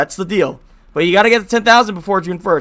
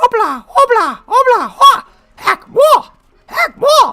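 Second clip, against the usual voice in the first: very high, squeaky mouse voice with big pitch swoops; 4 dB louder than usual. Doing a character impression: Lanky voice. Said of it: "He sounds like Mickey Mouse, so no wonder you can do the impression good".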